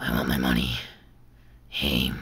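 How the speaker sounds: very low, deep, dropped demonic voice. Hoping for an anniversary episode, the speaker makes a demand in a demon voice. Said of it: "sorry for the demon voice".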